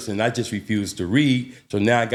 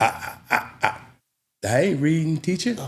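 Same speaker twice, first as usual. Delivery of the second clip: high stutter, "I" repeated before the words; 7 semitones higher than usual. Retelling refusing to read aloud in school: imitating own past stutter. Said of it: "Of my stuttering problem".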